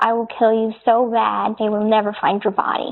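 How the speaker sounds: usual speaking voice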